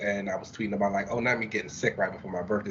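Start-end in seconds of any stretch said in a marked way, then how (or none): none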